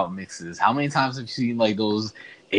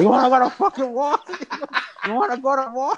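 very high, shrill screaming; 3 dB louder than usual. Retelling the speaker's son's Scarface imitation, imitating Scarface screaming. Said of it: "when he was screaming in the speaker box".

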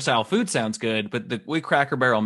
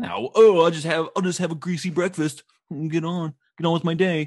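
put-on impression voice, pitched higher and slower; 4 semitones higher than usual. Talking about hangovers back at a friend's old apartment, doing an impression of past self. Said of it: "That's an impression of past me".

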